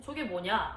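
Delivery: normal talking voice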